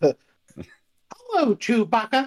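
very high, swooping cartoon squeak. Suggesting another speaker try it differently, then doing a Mickey Mouse voice. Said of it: "Why don't you do it in Mickey Mouse's voice?".

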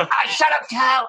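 very high-pitched, loud, quick dismissive retort. Retelling a South Park scene with wings on a roof: Cartman voice. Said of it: "He goes".

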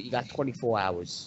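soft, put-on Brooklyn accent. After being told the last line was a good Brooklyn accent, the speaker repeats it in a Brooklyn accent. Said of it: "Brooklyn accent".

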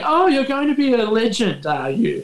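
voice brimming with glee. Retelling Bernard King's gleeful taunt at Michael: imitating Bernard King's glee. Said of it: "the glee in Bernard King's eyes going".

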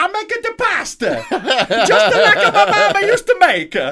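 very high, very loud, drawn-out put-on Italian accent. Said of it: "she's like".

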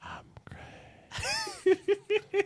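whispered voice. Voicing a voice that whispers into the players' ears: whisper. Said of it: "You all hear a whisper".

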